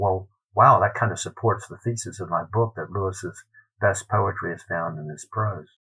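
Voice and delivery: ordinary talk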